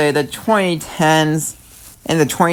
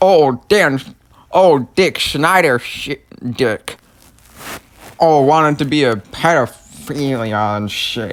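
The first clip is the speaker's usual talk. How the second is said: mocking, jeering put-on voice; 3 semitones lower than usual. Mocking the man being talked about: Jeffy voice. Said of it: "I just did the voice of Jeffy".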